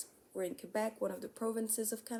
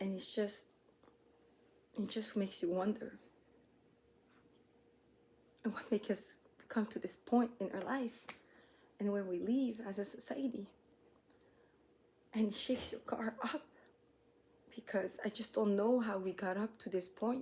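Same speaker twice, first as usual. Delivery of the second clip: emotionally shaken voice. Speaking from the heart to viewers after a wake-up call: shaken up. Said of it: "I'm still shaken up by all this".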